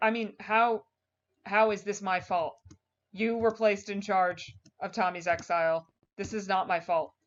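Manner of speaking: plain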